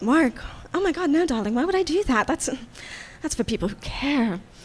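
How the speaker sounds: mock, carefree, lackadaisical, dumb, ditzy airhead voice. Voicing a lackadaisical character brushing off a question about work: lackadaisical, ditzy attitude. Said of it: "This very lackadaisical attitude".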